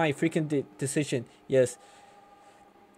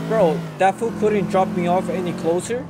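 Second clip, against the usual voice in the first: plain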